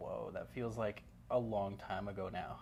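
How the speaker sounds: normal talking voice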